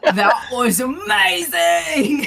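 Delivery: excited, thrilled character voice. Playing a character amazed by a coin trick: excited in character. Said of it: "And I get really excited".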